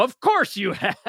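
shrieking, very high, loud scream. Recapping a scene where a woman answers Goku, retelling her screaming at him. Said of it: "she's just screaming at him".

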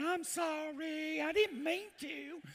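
thick, poured-on Southern drawl, very high, slow. Retelling how a wife talks to police: imitating a put-on Southern accent. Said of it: "she pours on the Southern accent".

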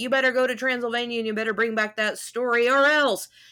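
loud acted bellowing, screaming voice. Retelling the boss yelling after two leaving characters: imitating a boss screaming. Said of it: "the boss screams over the rail".

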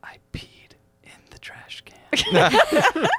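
put-on very slow, whispered, little-kid voice. Retelling what a child confessed after the bathroom: imitating a child whispering. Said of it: "he just whispers".

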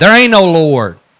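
heated angry shout, loud and high-pitched. Retelling what the atheist neighbor would shout back at her, imitating his shout. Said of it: "He would shout back".

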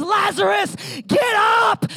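high-pitched, commanding yell. Retelling the raising of lazarus, calling into the tomb: retelling a yell. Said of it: "And he yells and he says".

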